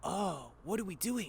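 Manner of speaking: grainy but soft put-on character voice. Voice actor explaining that he added grain to a character's voice: grainy Ash voice. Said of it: "more grain to the voice".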